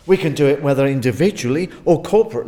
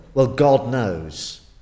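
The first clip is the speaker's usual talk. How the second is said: offhand, dismissive, almost cynical tone; 5 semitones lower than usual. Showing how people often say a phrase, mock-cynical. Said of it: "it's the way we say it. It's almost cynical".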